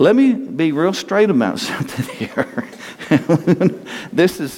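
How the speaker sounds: breaking into laughter mid-sentence, preacher cadence.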